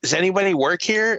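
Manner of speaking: high, huffy, exasperated, impatient tone. Retelling a woman kept waiting at a desk who turns to the speaker, imitating a huffy woman. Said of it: "all fucking huffy".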